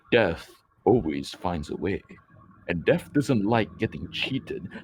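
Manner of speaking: heavy, low, gloomy, melancholic big-guy voice. Quoting a line from a movie character: imitating a big melancholic guy. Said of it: "big melancholic guy comes up to the protagonist and goes".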